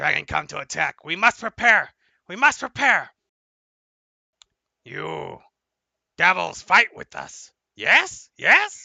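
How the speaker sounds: froggy, frog-like croak on every phrase. Voicing a creature from a croaking people, speaking to the group: croaking frog-like voice. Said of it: "it starts croaking and it sounds like a frog".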